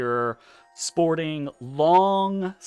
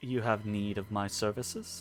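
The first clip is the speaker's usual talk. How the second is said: smug, self-satisfied, overly polite delivery; 7 semitones lower, 12 dB quieter than usual. Voicing a character offering his services to a queen: smug voice. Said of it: "in almost kind of, like, a smug way".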